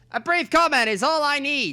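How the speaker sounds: put-on old-fashioned announcer voice. Voicing a reporter pressing for a brief comment, [name] old-timey reporter voice. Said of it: "Why am I old-timey news reporter".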